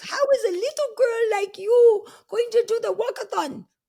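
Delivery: put-on slight Hungarian accent, very high-pitched and loud. Recalling age ten, the speaker quotes a woman doubting her walkathon plan: little Hungarian accent. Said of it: "in her little Hungarian accent".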